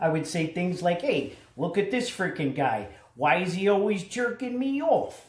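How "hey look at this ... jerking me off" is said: put-on Philadelphia tradesman accent. Low-voltage electrician showing how a real Philly electrician would talk; Philly electrician talk. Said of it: "I would probably talk a little bit more like this here".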